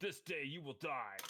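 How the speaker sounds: high, roaring, bellowed warrior-like voice. Voicing a shield-raising character's customary one-liner during a game, bellowing battle cry. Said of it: "he bellows his his his customary one-liner".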